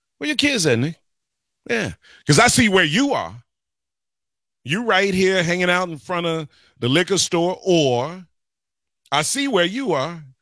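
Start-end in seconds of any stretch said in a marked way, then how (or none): 0.2-1.0 sassy voice with a little attitude. Acting out someone asking the speaker where his kids are: mock attitude. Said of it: "I'm saying it like that because there's a little attitude".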